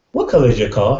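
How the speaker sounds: pitch lifting upward on car. Illustrating how a question creates tension: pitch rises on car. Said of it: "I created a tension, I went up in pitch".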